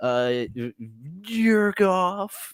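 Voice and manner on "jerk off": play-acted, high-pitched, shouted-out outburst. Retelling a movie scene, imitating Jim Carrey yelling. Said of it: "he yells out".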